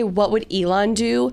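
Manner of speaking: ordinary talk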